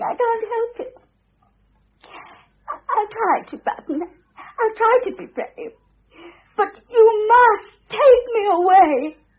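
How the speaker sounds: crying, tearful and weeping. Character on the phone after a furious row, pleading to be taken away, crying. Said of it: "Yes, I know I'm crying".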